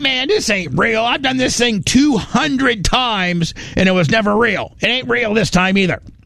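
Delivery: high, wide-ranging incredulous pilot-style voice.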